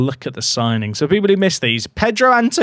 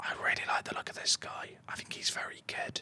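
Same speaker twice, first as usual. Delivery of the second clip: very quiet, hushed whisper. Praising a player while looking over a signing, whispering. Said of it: "I don't know why I'm whispering".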